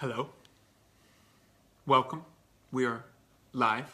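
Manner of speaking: mechanical, flat monotone robot voice. Host opens a live show beside his bride: talking like a robot. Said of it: "talking like a robot".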